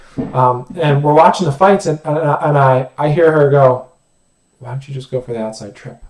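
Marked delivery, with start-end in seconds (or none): 4.6-6.1 quick, fast hushed whisper to oneself. Recounting a woman at the fights whispering to herself: retelling a whisper to herself. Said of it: "she kind of whispers that to herself".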